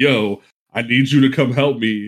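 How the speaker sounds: put-on panicked, pleading voice. Retelling a frantic call asking a friend to come help, imitating someone panicking. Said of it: "psycho was freaking the fuck out".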